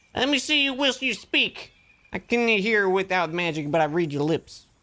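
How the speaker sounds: put-on heavy Southern accent, stern. Narrator voicing a man who reprimands you, in a thick southern accent. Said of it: "the man reprimands you with a thick accent".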